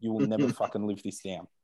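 imitated, put-on whisper. Imitating someone who never lets you forget it: imitating Gino whispering. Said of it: "he'll whisper into your ear".

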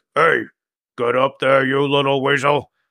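big, burly half-orc character voice. In a role-play scene, the speaker voices a half-orc ordering a kobold up, half-orc voice. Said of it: "He's like big and burly".

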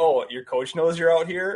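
strong put-on Canadian accent. Retelling how he talks to himself in goal, heavy Canadian accent. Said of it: "I get like a real heavy Canadian accent".

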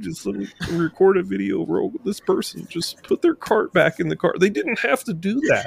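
open weeping in a very high voice. Speaker acts out their own reaction, mock weeping. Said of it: "we're just weeping openly".

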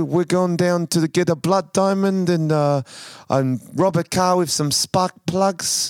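put-on South African accent. Asked to do a South African accent, put-on South African accent. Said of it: "Can you do a South African accent? Oh, yeah, bro".

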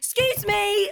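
mock loud passive-aggressive tone. Retelling what you shout at people in the cycle lane: mock loud passive-aggressive call. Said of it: "in a really passive aggressive, loud way".

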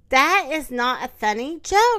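plain

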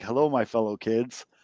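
put-on voice of a roughly 70-year-old man. Quoting what a 70-year-old gym coach says to mock a name, old gym coach impression. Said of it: "like your 70-year-old gym coach says when he's like".

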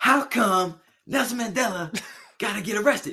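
high, stretched stand-up delivery. Showing how a comedian would say the line: Chris Rock impression. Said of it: "Chris Rock would be like".

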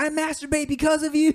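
very high-pitched scream. Retelling how a man screamed this in a full auditorium, retelling a scream. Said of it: "he was like screaming this".

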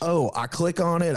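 put-on Southern accent. Acting out a person in a mix-up over joining a meeting, in a Southern accent. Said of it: "I don't know why I'm still doing a Southern accent".

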